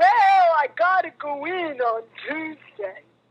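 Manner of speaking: put-on old-timer cowboy voice. Retelling a phone call with a man, imitating him: Don's very old cowboy voice. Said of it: "that's the way he sounds".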